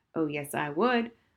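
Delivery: ordinary delivery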